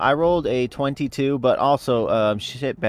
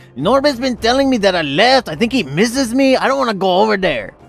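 very high-pitched, loud yell; 10 semitones higher, 7 dB louder than usual. Shouting back to a distant party member in the game: yelling in character. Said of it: "I yell back".

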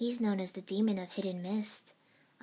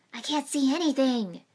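very loud, high-pitched alarmed hiss; 6 semitones higher, 10 dB louder than usual. Narrating a story as fog hides the fight, a character cries out: alarmed hiss. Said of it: "Naruto hissed, alarmed".

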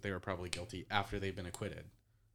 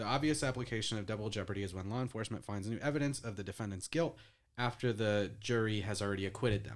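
ordinary talk

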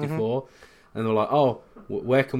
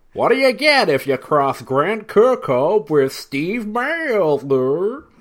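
raised, pitched-up, fake, dopey American accent; 8 semitones higher, 8 dB louder than usual. Telling a joke to the other speaker, in a put-on dumb American voice. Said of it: "I love your American voice".

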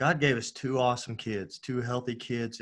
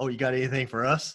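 acted, dry, mocking sarcastic tone. Retelling a reply to a friend's prophecy claim: retelling own sarcastic reply. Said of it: "I was sarcastic in my response".

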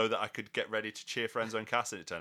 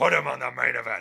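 very loud, booming, gravelly put-on bellow with rasp; 4 semitones higher, 11 dB louder than usual. Acting out what Vince would say, in a Vince voice. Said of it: "But in a Vince voice".

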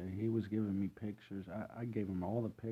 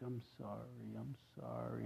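acted-out weepy, slow, drawn-out, tearful delivery; 2 semitones higher, 8 dB quieter than usual. Retelling what everyone at the party said: imitating people crying. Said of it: "they're all crying".

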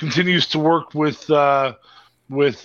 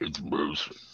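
hushed, very quiet put-on character voice; 11 semitones lower, 12 dB quieter than usual. Announcing the gold-draped Moose, Moose's voice. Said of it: "Let me say it in Moose's voice".

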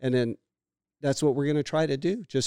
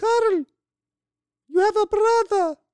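put-on Hungarian accent, very high and loud; 6 dB louder than usual. Speaker retelling what his mother said to him: mom in hungarian accent. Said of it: "I use a Hungarian accent".

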